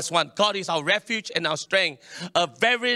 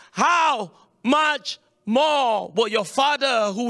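how much more stressed, slow and high. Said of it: "underline the word".

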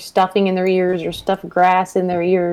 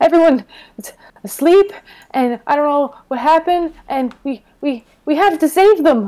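put-on breathless panting, much higher pitch; 8 semitones higher, 4 dB louder than usual. Playing a character dragging an asleep companion back to the group, acting out of breath. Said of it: "I imagine I'm out of breath".

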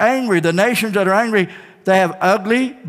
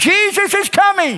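very high-pitched shout; 10 semitones higher than usual. Leading the audience in a voice lesson, shouting. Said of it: "shout it".

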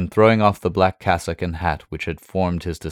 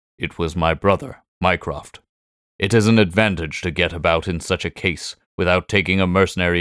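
plain

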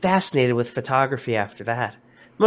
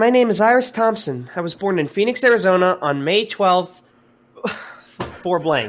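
high-pitched put-on girl voice; 6 semitones higher, 4 dB louder than usual. In a mock interview, giving a personal introduction as Iris Thompson, in a girl voice. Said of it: "Let me get my girl voice on".

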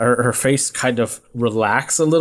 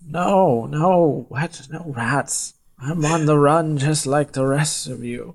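put-on bewildered, confused little old woman voice; 3 semitones higher than usual. Voicing a confused old lady asked about rats: confused old lady character. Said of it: "looks at you with, like, a confused, dopey face".

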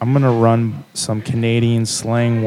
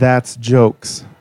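normal talking voice

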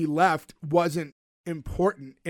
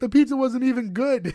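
play-acted, sudden, high-pitched screamed complaint; 6 semitones higher, 3 dB louder than usual. Recapping a scene, acting out how a man screamed his line. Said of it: "he screamed at one point".

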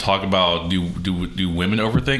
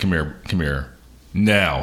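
deep, low voice; 2 semitones lower than usual. Recalling calling a child over when he's in trouble, in a deep voice. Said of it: "do you get deep voice? Yeah, I'm like".

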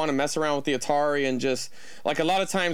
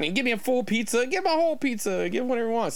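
put-on Italian American accent; 8 semitones higher than usual. Retelling a man's words, doing an Italian American accent impression. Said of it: "I'm not trying to do a bad impression of an Italian American".

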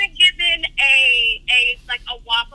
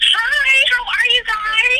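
eager, excited, very high-pitched voice; 10 semitones higher than usual. A caller greets the hosts live on the air, sounding excited. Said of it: "you sound very excited".

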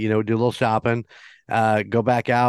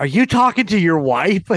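play-acted high, raised shout; 8 semitones higher, 4 dB louder than usual. Retelling calling across a big bathroom to a mumbling man, retelling a shout. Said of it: "And I just shout".

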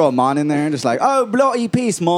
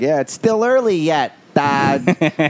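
overdone, exaggerated Midwestern American accent. Showing off their own Midwest accent: exaggerated Midwestern American accent. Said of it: "I have an accent because I'm from the Midwest, and I'd be like".

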